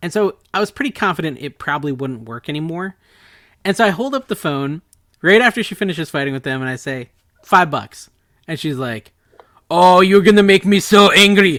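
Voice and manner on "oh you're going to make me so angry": put-on very loud, high, thick German accent. Retelling what a woman said after he held up the phone, in a thick German accent. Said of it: "In this thick German accent".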